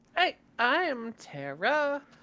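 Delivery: lilting, tune-like sing-song voice. Introducing oneself to the group by name: sing-songy voice. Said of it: "in a sing-songy voice".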